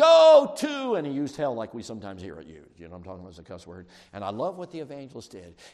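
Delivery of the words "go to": high, loud angry yell. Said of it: "the guy yelled to him".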